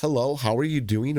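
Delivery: ordinary delivery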